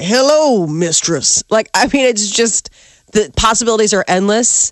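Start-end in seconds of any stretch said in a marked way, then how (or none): 0.0-1.4 lazy, slow Southern man's drawl. Picturing what the house would sound like, as a slow southern man's voice. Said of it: "a slow southern man coming around like".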